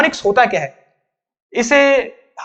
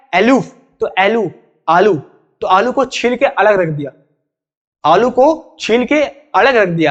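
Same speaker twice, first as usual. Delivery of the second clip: aluf slowly drawn out so it sounds like aloo. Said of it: "तो technique क्या है".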